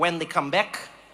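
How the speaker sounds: put-on odd not-quite-Dutch accent. Retelling a man's reply in a conversation, weird not-quite-dutch accent. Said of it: "it was like Dutch, but it wasn't Dutch accent".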